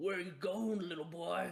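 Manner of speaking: high-pitched, menacing, snarling voice. Narrating a game, voicing an attacker pinning a player to the ground: snarling. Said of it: "He snarls at you and he goes".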